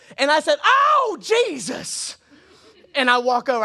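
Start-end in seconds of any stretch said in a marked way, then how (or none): 0.6-2.2 mock very high, swooping old lady startled yelp. Retelling being startled by someone in a mask at church, retelling a scared yelp. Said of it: "When I was scared".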